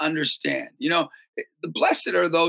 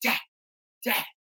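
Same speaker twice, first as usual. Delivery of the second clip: quiet, hushed whispering; 6 semitones higher, 5 dB quieter than usual. Retelling how the son John Paul spoke to him: imitating a son whispering. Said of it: "he's whispering to me".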